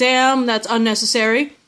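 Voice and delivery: normal talking voice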